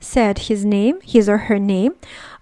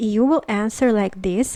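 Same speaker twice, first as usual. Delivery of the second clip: ordinary talk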